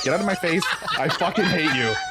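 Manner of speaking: mock contemptuous, hateful tone. Retelling what Hardcastle says whenever he sees Abdul: imitating hateful anger. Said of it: "Hardcastle hates the fuck out of Abdul".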